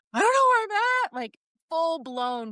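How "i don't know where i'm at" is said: mock-hysterical crying, higher and faster. Recounting being lost while driving and on the phone, retelling hysterical crying. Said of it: "crying like hysterical".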